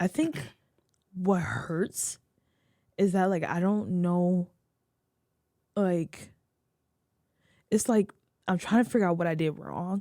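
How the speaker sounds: voice full of tears, crying. Speaker goes on after being told to take their time, tearful, crying. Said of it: "I'm such an ugly crier".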